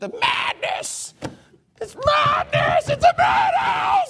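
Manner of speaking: very high-pitched, mild shriek. Describing a caged character, the speaker acts out his screams: retelling a scream. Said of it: "And he's just screaming".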